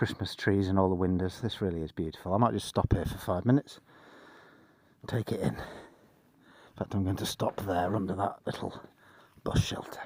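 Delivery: quiet half-whispered speech. Traveller stopping in an empty village to take it in, half-whispering. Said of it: "Don't know why I'm whispering".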